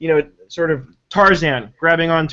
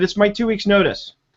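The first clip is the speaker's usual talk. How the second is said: very stern, pitched-up tone; 5 semitones higher than usual. Retelling handing in a notice: imitating own stern tone. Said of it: "I said it just like that, like, very sternly".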